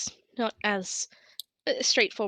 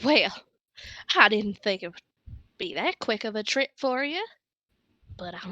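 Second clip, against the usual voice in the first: put-on quick, old dwarven wizard character voice; 4 dB louder than usual. Storyteller voices a dwarf standing by an abandoned vineyard building, gray-bearded dwarf voice. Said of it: "dwarven man with a graying beard ... just going".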